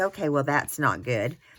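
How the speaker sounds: ordinary talk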